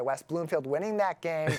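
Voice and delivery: ordinary talk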